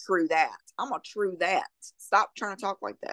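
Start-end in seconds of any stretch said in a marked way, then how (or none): none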